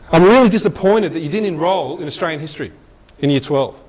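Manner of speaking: plain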